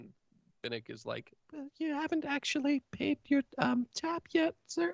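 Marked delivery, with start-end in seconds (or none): 1.5-4.9 very high, careful character voice. Voicing Finnick replying to the guy at the bar: speaking quietly. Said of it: "and sort of quietly".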